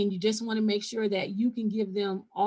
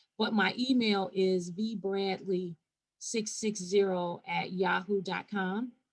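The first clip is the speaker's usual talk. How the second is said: slow, deliberate, measured reading, carefully spelled out; 2 semitones lower than usual. Giving an email address for anyone who missed the screenshot: speaking slowly. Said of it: "I'll just say it slowly".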